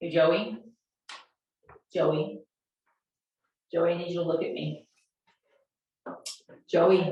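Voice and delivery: kept calm and low throughout. Speaker demonstrates getting someone's attention by saying their name: calm, low voice. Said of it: "You keep your voice calm".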